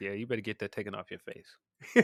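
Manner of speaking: put-on, dead serious tone. Retelling a movie scene, quoting Mike Tyson: imitating Mike Tyson's dead serious tone. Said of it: "the most serious tone ever".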